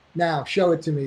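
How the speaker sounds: plain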